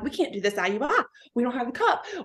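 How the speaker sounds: acted crying, tearful speech. A woman retells stressing in the office over the missing cup, acting out past crying. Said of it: "I'm like crying".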